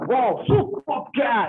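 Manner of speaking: put-on, hyped-up, excited sports commentator tone. Showing how they talk, in their own style: imitating an excited exclamation. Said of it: "ऐसे बोलते हैं".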